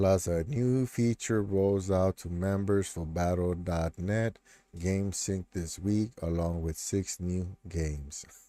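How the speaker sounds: monotone voice. Offering to help a listener get back to sleep, in a monotone voice. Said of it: "I'll help you out with my monotone voice".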